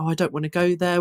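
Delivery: ordinary delivery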